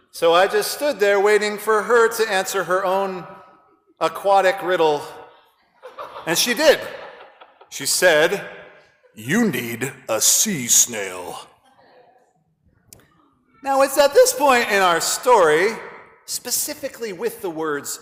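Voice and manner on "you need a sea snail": unusually deep, very low, slow, drawn-out voice. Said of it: "she had an unusually deep voice".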